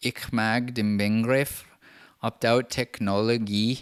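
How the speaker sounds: Swedish-sounding accent. Reading German subtitles aloud from a video, with some kind of Swedish accent. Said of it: "I did like some kind of Swedish accent".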